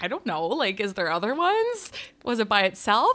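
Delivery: ordinary delivery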